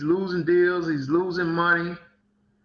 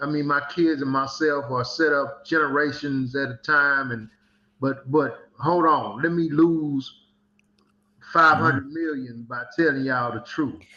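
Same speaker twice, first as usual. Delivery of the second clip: normal talking voice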